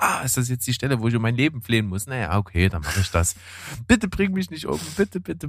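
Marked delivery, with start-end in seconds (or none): 3.9-5.5 hammy, over-the-top, pitched-up begging. Retelling a woman's lines as a man holds her arm, overacted begging. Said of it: "so geil overacted".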